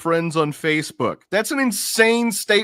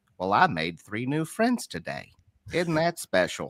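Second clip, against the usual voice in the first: very low, soft, sweet put-on gentle voice; 9 semitones lower, 7 dB quieter than usual. Describing the end of a day meeting strangers, Mister Rogers voice. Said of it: "I want to say it in almost like a, a mister Rogers voice".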